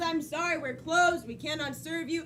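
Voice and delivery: plain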